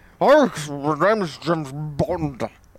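slow, drawn-out, drawling fading film-star voice. Describing how a voice changed in later Bond movies: later Sean Connery impression. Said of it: "how his voice changed over the course of".

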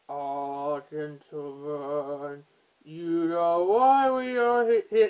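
very slow, failed attempt at a deep voice. After admitting they can't do a deep voice, the speaker tries one: attempted deep voice. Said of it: "I don't do deep voice either".

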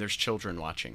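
normal talking voice

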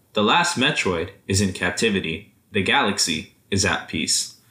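ordinary talk, nothing marked

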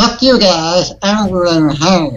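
blurted put-on cartoon voice, slow and drawn out. Joking around with people before a run, blurting out a line in a Cartman voice. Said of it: "I fucking broke out Cartman".

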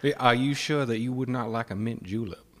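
polite, courtly put-on Southern accent. Offering a mint julep to the other speaker: Colonel Sanders voice. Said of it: "You sound like Colonel Sanders".

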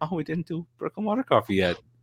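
put-on soft, sing-song, innocent little boy voice. Imitating how another speaker just sounded: imitating Keith's innocent little boy voice. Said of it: "like a little innocent little boy saying".

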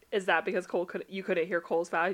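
normal talking voice

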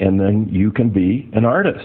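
ordinary delivery

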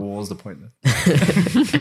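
slow, rueful delivery with laughter. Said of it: "and you're like".

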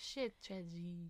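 put-on French accent on both words. Repeating a phrase for a friend who asked, in a French accent. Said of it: "She was saying in a French accent".

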